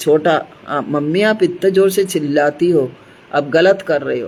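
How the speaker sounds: usual speaking voice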